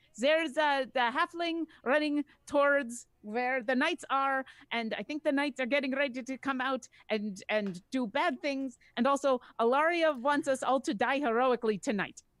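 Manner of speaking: loud voice called up and out, projected. A game character pokes her head out, calling to everyone still inside: shouting. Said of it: "She's just going to shout it".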